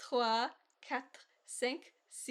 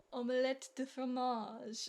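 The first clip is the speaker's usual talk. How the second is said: authentic-sounding, convincing French accent. Repeating a french phrase after the other speaker, convincing french accent. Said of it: "Why do you sound so much more French?".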